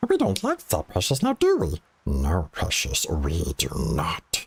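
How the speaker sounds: sinister, evil voice with swooping pitch. Doing the Gollum alter ego talking with himself: evil Gollum voice. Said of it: "the evil Gollum, like, he's having, like, the conversation with himself".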